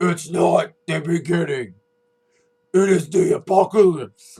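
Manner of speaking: very low, deep, rasping wrestler-style voice. Judging a tall performer's mic work, quoting his promo in a very deep, raspy voice. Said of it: "Very deep, raspy voice for his promo".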